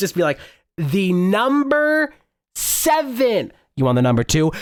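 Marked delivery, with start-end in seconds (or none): 0.8-3.5 high shout, each word enunciated, "seven" stretched. Speaker retells having to repeat themselves three times, shout-enunciating it. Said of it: "shout enunciating it".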